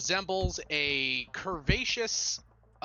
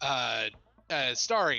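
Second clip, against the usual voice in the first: ordinary talk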